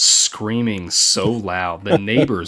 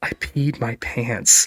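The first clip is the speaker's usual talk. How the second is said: slow theatrical whisper; 2 semitones higher than usual. Retelling what a terrified woman half-whispered after a prank: imitating a half-whisper. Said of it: "she whispers in my ear".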